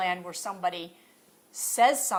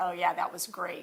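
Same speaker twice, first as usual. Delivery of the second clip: ironic, sarcastic delivery; 4 dB quieter than usual. Showing how an ironic remark about the election sounds: ironic, sarcastic delivery. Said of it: "So I'm being ironic".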